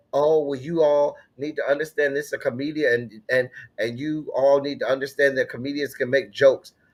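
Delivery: plain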